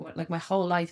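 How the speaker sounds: plain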